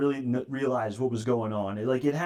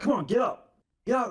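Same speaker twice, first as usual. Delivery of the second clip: put-on very high, aggressive, furious, goading rage; 10 semitones higher than usual. Speaker retells standing over a man they knocked to the floor, retelling a furious taunt. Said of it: "I- am ready to fucking kill this guy".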